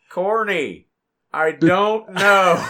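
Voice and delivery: loud, high, very slow stretched-out drawl. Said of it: "like, Terry Funk voice".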